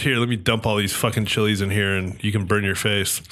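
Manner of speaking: ordinary delivery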